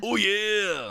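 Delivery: very high, gruff wrestler voice, stretching the yeah. Suggesting how the mascot would sound: Macho Man Randy Savage voice. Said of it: "I was thinking Randy, Randy Savage, Macho Man".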